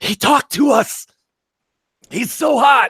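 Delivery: drawn-out stage whisper, very high. Retelling how a friend leaned down and said this: imitating a loud whisper. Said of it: "does the loud whisper lean down thing".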